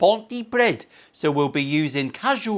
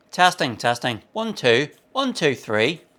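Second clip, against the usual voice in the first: put-on Northern Irish accent. Testing the microphone in a put-on northern irish accent. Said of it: "I always test me microphone in a Northern Irish accent".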